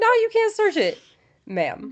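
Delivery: put-on, very high, swooping, instantly defensive tone. Mocking a woman in a clip who refuses a search warrant: imitating someone getting instantly defensive. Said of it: "we're gonna get insta defensive".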